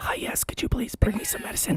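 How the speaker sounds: hushed, very quiet, barely audible whisper. Retelling calling the front desk after losing the voice: imitating his own whisper. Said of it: "he's whispering".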